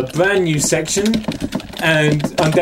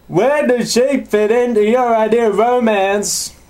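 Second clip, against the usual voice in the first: put-on hillbilly Southern accent, pitched up; 7 semitones higher than usual. Speakers riff on accents, and one asks a question in a Jerry Springer southerner accent. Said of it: "This is my Jerry Springer southerner".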